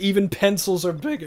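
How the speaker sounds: voice cracking. Finishing a joking legend line to the group, voice cracking. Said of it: "nice voice crack there".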